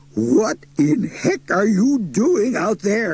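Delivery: high, croaky, worn-out voice. Mister Muldoon, flopped on his seat, calls out to his son, croaking. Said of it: "He croaked".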